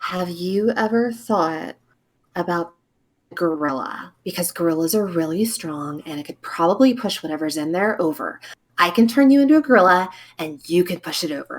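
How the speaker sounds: scheming, conspiratorial, confiding just-between-us tone. Juniper goes over to another character and speaks to him: conspiratorial. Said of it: "kind of conspiratorially".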